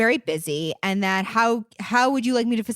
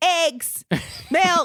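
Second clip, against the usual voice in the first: yelling, higher pitched; 7 semitones higher than usual. Picturing a lady walking through a store: imitating someone yelling. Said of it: "just yelling food words down the aisle".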